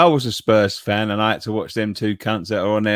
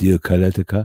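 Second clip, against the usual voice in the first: Spanish-sounding pronunciation; 2 semitones lower than usual. Pronouncing a footballer's name when asked: Spanish-sounding pronunciation. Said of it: "Why does he sound like Ibrahimovic?".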